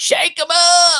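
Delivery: very high, shrill, loud, insistent yell. Recounting a church charity raffle where a woman kept yelling, retelling a woman's yell. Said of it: "this woman kept yelling".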